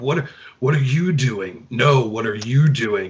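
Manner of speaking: low, gravelly voice. Imitating two fighters talking during a fight: Nicolas Cage-style gravelly voice. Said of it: "talking like this. ... Nicolas Cage kinda deal".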